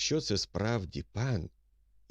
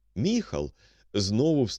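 usual speaking voice

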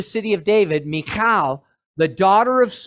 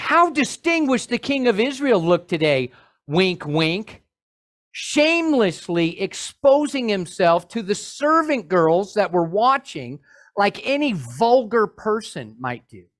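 usual speaking voice

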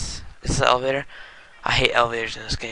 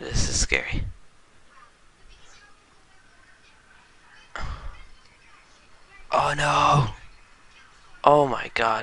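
frightened, scared, swooping little outbursts; 3 semitones higher than usual. Talking to the guys while the game plays out, scared. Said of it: "I'm scared, guys".

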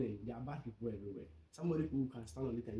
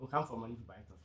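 normal talking voice

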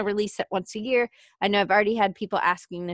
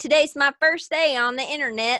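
put-on Southern American accent, pitched up; 5 semitones higher, 4 dB louder than usual. Clowning after a flubbed web address, the speaker slips into a Southern accent. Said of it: "I don't know why I have to do that with a Southern accent".

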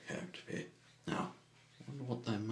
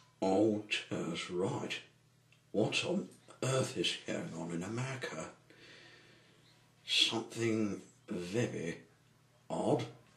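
usual speaking voice

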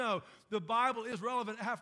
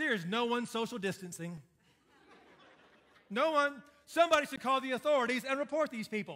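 ironic, sarcastic, tongue-in-cheek tone; 3 dB louder than usual. Retelling a frustrated remark made to the speaker's wife: retelling a sarcastic remark. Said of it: "When I get frustrated, I get sarcastic".

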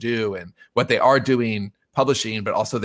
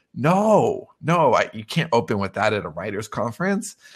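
shocked and aghast tone. Retelling a colleague's reaction to advice to open with news: imitating someone aghast. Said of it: "she's aghast".

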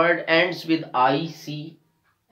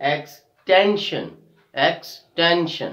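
slow, drawn-out stress on TEN. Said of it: "we are stressing on the second last syllable".

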